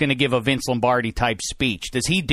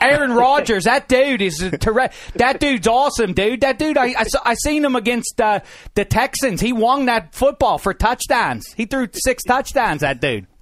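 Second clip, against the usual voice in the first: higher, put-on Pittsburgh accent; 8 semitones higher than usual. Joking back after being told he lost his accent: put-on Pittsburgh accent. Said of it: "You don't think I talk that way, dude?".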